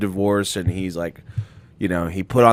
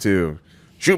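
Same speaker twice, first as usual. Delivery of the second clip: ordinary delivery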